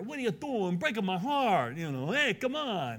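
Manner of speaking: put-on New York accent. Speaker repeats a man's reply to people urging him not to go, New York accent. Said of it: "He almost sounds like a New Yorker".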